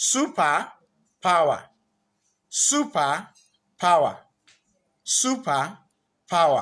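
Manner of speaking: slow, superpower split into super and power. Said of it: "we broke it down into two".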